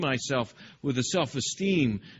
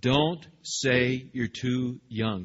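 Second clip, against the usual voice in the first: play-acted slow stern scolding tone, parental manner; 2 semitones lower than usual. Retelling what God said to Jeremiah, quoting in a stern voice. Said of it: "saying with a stern voice".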